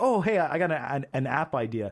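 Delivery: ordinary delivery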